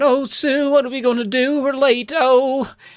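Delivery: very high, drawn-out panicked fretting. Retelling a scene where Eddie panics about being late: acting out panic. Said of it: "And Eddie's panicking".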